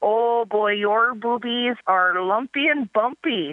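put-on thick, laid-on Minnesota accent. Quoting what her gynecologist told her, in a heavily accented Minnesotan voice. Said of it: "with her heavily accented Minnesotan voice".

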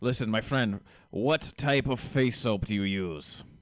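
put-on Russian accent. Retelling an aggressive mall kiosk face soap salesman, in a Russian Soviet type accent. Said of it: "some kind of Russian Soviet type accent".

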